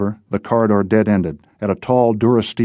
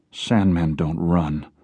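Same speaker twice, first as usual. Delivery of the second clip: flat, toneless, level, matter-of-fact delivery; 3 semitones lower, 4 dB quieter than usual. Answering Logan, the woman replies flatly. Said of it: "she said flatly".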